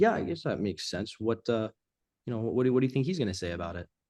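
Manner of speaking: open, interested, curious and inviting tone. Example of coming back with a reply: curious inviting tone. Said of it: "A little more of a curious tone. It's more inviting".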